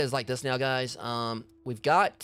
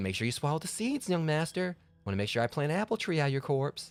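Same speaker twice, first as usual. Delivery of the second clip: eerie, creepy housemaid voice; 3 semitones higher, 5 dB quieter than usual. Describing a game maid who offers an apple: imitating the creepy maid. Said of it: "all of a sudden you hear".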